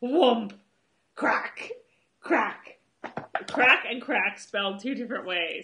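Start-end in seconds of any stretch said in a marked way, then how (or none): 0.0-3.9 put-on Scottish accent, loud and slow. Joking around with another speaker, say it in a scottish accent. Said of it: "Is that is that your Scottish accent?".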